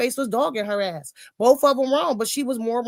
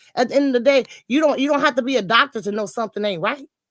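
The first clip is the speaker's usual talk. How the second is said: normal talking voice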